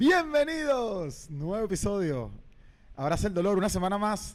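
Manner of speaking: loud, slow, announcing radio presenter voice. Host welcoming listeners to a new episode, radio voice. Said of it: "dice que pongo voz de radio".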